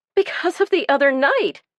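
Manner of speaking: high, squeaky voice. A frightened woman lies to a man who asks why she fears him; high, squeaky voice. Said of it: "lying in a high, squeaky voice".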